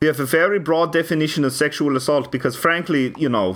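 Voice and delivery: mock, put-on German accent. Joking in character as a Swede, in a mock German accent. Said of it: "I'm doing my German voice".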